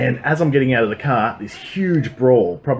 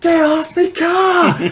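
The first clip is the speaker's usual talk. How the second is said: re-enacted scream, much higher; 4 dB louder than usual. Speaker recounts a group of people on their car, retelling a scream. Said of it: "I'm screaming at them to get off the fucking car".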